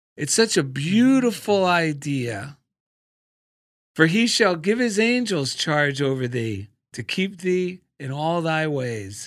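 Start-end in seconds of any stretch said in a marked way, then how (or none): none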